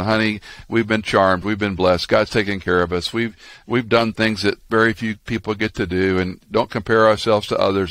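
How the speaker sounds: usual speaking voice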